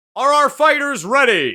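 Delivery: shouting announcer voice. Narrating a game scene, the announcer calls to the fighters; shouting announcer voice. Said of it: "You hear the announcer voice shout".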